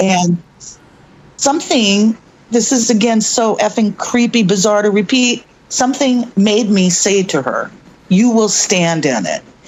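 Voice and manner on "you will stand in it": authoritative, firm, commanding voice. Retelling words said to a frightened woman at a door: imitating own commanding voice. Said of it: "in a commanding voice that was my voice".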